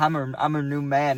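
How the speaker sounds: ordinary talk, nothing marked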